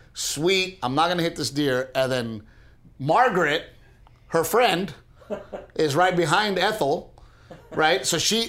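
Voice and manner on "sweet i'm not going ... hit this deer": ordinary talk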